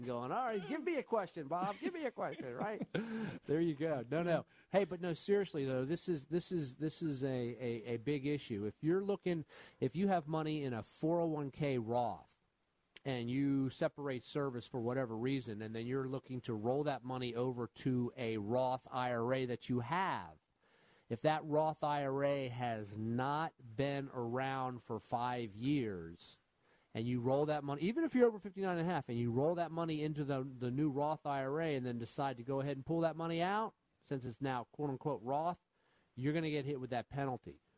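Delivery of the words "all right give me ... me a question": laughing, high-pitched imitation. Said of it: "Bob's laughing, going".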